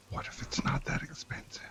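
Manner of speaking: soft, whispered aside. Whispering an aside to another character during the game: whispering. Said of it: "I'm gonna whisper to mister Blackbat again".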